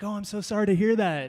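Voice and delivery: put-on sympathetic tone. Retelling how people respond to sad news: imitating an empathetic voice. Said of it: "come out with the empathetic voice".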